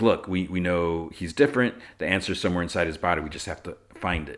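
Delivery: ordinary delivery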